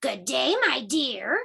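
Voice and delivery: growled, growling voice. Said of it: "growled the wolf with a big bad smile".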